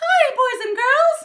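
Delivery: very high head voice, loud, slow, drawn out. Demonstrating head voice resonance to a learner: Mickey Mouse voice. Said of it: "sort of like Mickey Mouse's voice".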